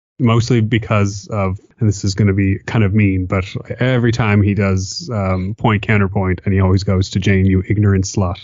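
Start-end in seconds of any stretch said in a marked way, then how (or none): 7.5-8.4 put-on deadpan, curt delivery. Quoting a sketch's recurring line: deadpan, curt Dan Aykroyd delivery. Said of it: "deadpan and, like, curt".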